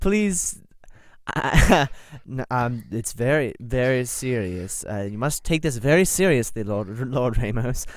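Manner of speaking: trying to stay grave while fighting back giggles. Voicing a lord who gives a joke order: acted trying not to laugh. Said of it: "looks like he's cracking up into a smile".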